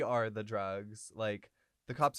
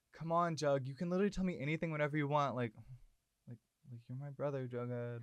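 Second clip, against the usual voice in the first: mock whispering, quieter and faster; 4 semitones higher, 3 dB quieter than usual. Retelling a heated scene between two characters, retelling a whisper. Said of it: "And he whispers it".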